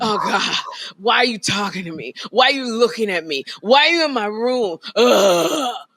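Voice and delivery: mock exasperated whining. Imitating Jeffrey groaning at a morning greeting: imitating a son's groaning complaint. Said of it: "he loses all his bone structure, and then he falls forward".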